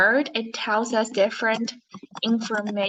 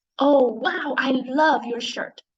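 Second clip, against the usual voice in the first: reading aloud with big, strongly excited feeling; 3 semitones higher than usual. Showing listeners how to read an exclamation mark, strong excited feeling. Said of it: "we will say it with a strong feeling".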